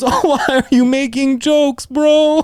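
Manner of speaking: mock frightened voice. Retelling being locked in a safe room, imitating a scared coworker. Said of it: "he was so scared, bro".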